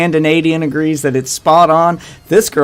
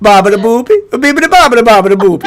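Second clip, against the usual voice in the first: put-on, poorly done Italian accent; 6 semitones higher, 5 dB louder than usual. Showing off your accents to the others, now doing a bad italian accent. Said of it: "And then there's Italian".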